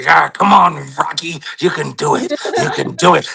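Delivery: slow, drawn-out, rough, creaky voice. Retelling how the coach Mickey motivated Rocky: imitating Mickey coaching Rocky. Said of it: "He'd be like".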